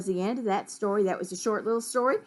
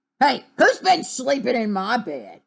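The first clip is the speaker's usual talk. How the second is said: growled, loud and swooping; 3 semitones higher, 6 dB louder than usual. Narrator reads Daddy Bear's line upstairs, in a growling Daddy Bear voice. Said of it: "growled Daddy Bear".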